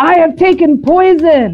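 play-acted, very high, drawn-out dramatic scream. Retelling what a man said to the people in the parlor, acting out a scream. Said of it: "He screams it".

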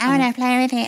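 mock-eager, high, frothing voice. Speaker recalls following an attractive guy around, retelling frothing eagerness. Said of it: "I'm following around frothing".

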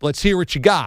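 plain

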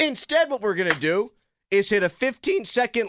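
high, cracking voice breaking mid-sentence. Host leading into a segment instead of a commercial break, voice cracking. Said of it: "my voice cracked".

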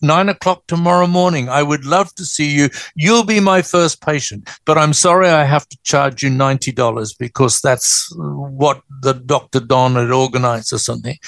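ordinary delivery

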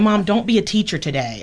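ordinary talk, nothing marked

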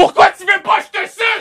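very high, loud, ultra-aggressive yell. Acting out what the listener yelled at casino patrons, retelling an aggressive shout. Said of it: "en y criant".

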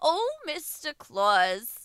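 put-on New Jersey accent in a radio commercial read. Trying to voice a commercial, speaker reads the line in a new jersey accent. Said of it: "Why are you in New Jersey?".

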